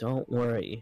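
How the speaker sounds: quiet whisper. Playing a character stepping behind a companion to speak to him, whisper. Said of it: "just whisper to him quietly".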